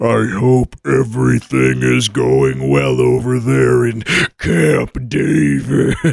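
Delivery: dark, deep, creaky, rough demon voice. Reading a listener message from the Underlord, the podcaster picks a voice: demonic deep voice. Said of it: "I want to go with demonic deep voice".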